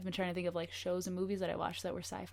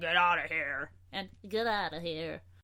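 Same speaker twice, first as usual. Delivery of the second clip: put-on cat voice; 4 dB louder than usual. Showing the two voices a pet cat now has, in a cat voice. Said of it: "That that's a great cat voice".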